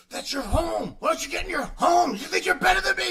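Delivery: shrill, very loud, very high screaming rant. Describing a scene from a film, the speaker acts out a man screaming at an object; imitating someone screaming. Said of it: "when he's like screaming at the ball".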